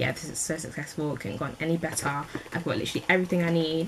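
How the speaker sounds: ordinary delivery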